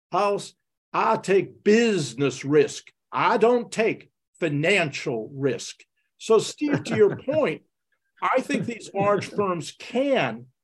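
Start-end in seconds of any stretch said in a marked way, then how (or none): 0.2-5.9 put-on, low, deep Southern accent. Recalling what he answered you at a dinner about a deal, in Hugh's deep Southern voice. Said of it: "he said in that wonderful deep Southern voice".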